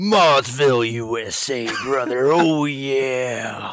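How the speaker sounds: very loud roaring wrestler promo voice, yeah stretched out. Host greeting a guest at the show's start, a Macho Man impression. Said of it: "I'm going to try to sound like Macho Man".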